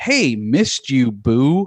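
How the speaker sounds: slow, drawling, terrible fake American accent. Quoting a clunky movie line, imitating Dan Stevens' fake American accent. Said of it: "that terrible accent".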